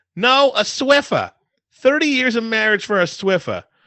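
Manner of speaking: put-on very high, loud, shrill New York accent. Playing a mother answering her child, in a New York mom accent. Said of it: "I wonder if I can have like a New York mom accent".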